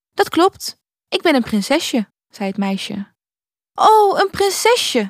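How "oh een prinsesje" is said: very high exclaimed outburst. Narrator reads the little prince's reply to a girl who is a princess, exclaiming. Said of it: "riep het prinsje uit".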